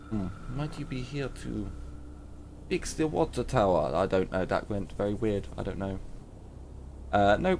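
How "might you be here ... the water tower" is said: put-on Russian accent. Trying out words never said this way before, the speaker delivers a line in a Russian accent. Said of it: "some of these words I've never said with a Russian accent before".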